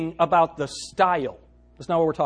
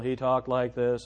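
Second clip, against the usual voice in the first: mock monotone preacher voice, lower and quieter; 5 semitones lower, 6 dB quieter than usual. Retelling how a preacher at Bible college talked: imitating a monotonous preacher. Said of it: "it was monotonous".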